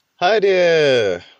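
bright, bouncy, energetic voice, pitched very high. Greeting viewers at the start of the video: energetic greeting. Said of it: "that sounded so en-, energetic".

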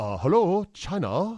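slight, light put-on Chinese accent. Speaker announces an accent, then opens the bit in a light Chinese accent. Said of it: "I'll do a light Chinese accent".

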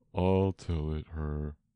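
deep, hollow, low, sunken voice. Replying to a companion who speaks for a young lady: deep hollow Mock Turtle voice. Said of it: "said the Mock Turtle in a deep, hollow tone".

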